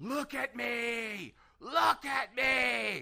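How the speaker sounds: screaming, high-pitched and slow. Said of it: "they were screaming into a microphone".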